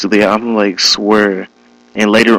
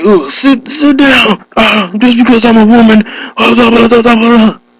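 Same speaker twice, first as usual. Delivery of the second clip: acted out, very high, shrill, high-pitched yelling; 13 semitones higher, 4 dB louder than usual. Retelling how the supervisor yelled at everybody: imitating the supervisor yelling. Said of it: "she was just yelling, like".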